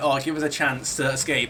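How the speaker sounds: ordinary talk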